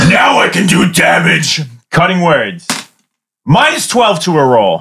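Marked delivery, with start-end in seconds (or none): 0.0-1.6 half-shouted, mild yell in character voice. In a tabletop game, a player voices his character during an attack: yelling. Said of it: "And he yells".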